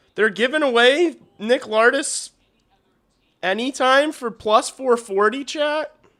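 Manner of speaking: high, loud, shouted shocked disbelief.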